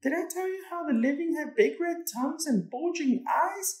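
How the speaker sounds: very high-pitched, jabbering, chattering voice. Narrating a sister talking to her scared brother Angelito, jabbering. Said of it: "His sister jabbered".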